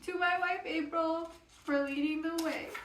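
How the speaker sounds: high, tearful voice, crying while reading aloud. Reading aloud the book's dedication: crying while reading. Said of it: "I'm already crying".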